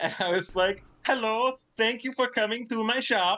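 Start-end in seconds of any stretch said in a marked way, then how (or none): 1.0-3.4 put-on wandering accent drifting into Swedish. A game master retelling how they voiced a dwarf shopkeeper, accent drifting into swedish. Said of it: "landed somewhere around Swedish".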